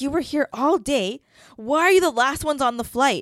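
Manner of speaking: high, stern scolding tone. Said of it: "She was speaking in that tone".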